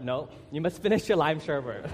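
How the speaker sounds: normal talking voice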